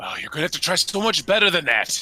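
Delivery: disappointed dad voice. Answering a pirate's threat in character: disappointed father voice. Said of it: "Ivan just sounds like a disappointed father".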